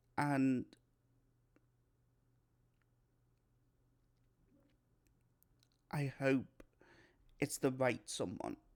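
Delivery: voice on the verge of tears.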